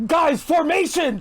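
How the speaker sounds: mock, very high-pitched scream. Playing a character calling the others back into formation: screaming. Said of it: "I'm screaming".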